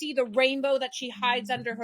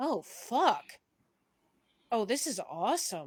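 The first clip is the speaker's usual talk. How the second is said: low, hushed, swooping voice in deeper register; 3 semitones lower, 6 dB quieter than usual. Playing her character, who reacts to her own new look: lower voice. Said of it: "just goes in a m- lower voice".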